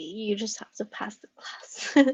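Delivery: soft, unvoiced, joking secretive whisper.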